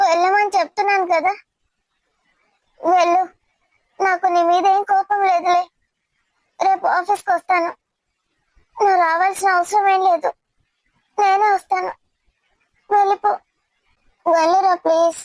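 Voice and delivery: tearful voice, crying while talking. Insisting the other person go home: crying while talking. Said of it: "ఈ మధ్య ముడితే చాలు ఏడుస్తున్నావు".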